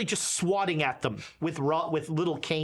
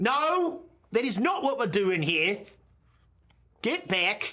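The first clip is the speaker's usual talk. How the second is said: very strong put-on Australian accent, pitched up; 5 semitones higher than usual. Voicing a priest shooing kids away: Australian accent. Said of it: "in a very Australian way".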